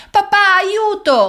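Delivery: shrill, very high-pitched shouted cry. A girl attacked by a monster calls to her father at the door, shouting for help. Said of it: "Gridò Sara".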